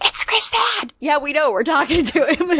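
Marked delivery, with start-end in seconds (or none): 0.0-0.9 put-on creepy whisper, pitched higher. Retelling how a character points out relationships: imitating a creepy whisper. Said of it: "creepy whispering".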